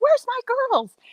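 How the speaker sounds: high, happy, sing-song calling voice.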